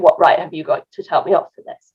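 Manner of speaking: plain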